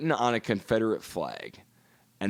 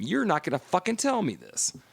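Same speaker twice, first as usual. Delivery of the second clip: mock screaming, high and swooping; 7 semitones higher than usual. Retelling a shouting match with a coworker: imitating own past screaming. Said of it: "I'm screaming back at him".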